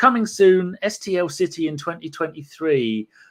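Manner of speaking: ordinary talk, nothing marked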